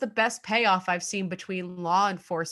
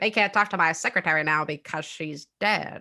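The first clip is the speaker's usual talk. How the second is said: put-on old-fashioned evil villain voice. Act out what a suspect said in the transcripts of his bugged house, in a 1950s voice. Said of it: "I love your 1950s voice".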